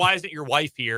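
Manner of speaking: ordinary talk, nothing marked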